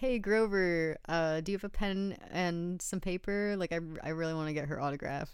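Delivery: plain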